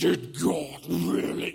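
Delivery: creaky movie snake voice. Showing how Hollywood imagines the snake talking to the woman, Hollywood-style snake voice. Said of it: "Hollywood wants you to believe it was this kind of voice".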